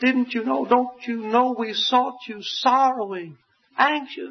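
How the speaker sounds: mock very high, reproachful, chiding motherly voice. Retelling what a mother said on finding her son, quoting a chiding mother. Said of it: "a chiding tone in his mother's voice".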